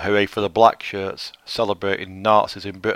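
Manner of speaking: ordinary talk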